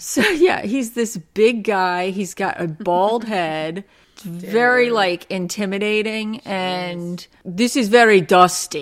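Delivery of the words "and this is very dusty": loud, put-on Russian accent. Speaker imitates the big guy they're describing, in a Russian accent. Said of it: "just do your Russian accent when you imitate him".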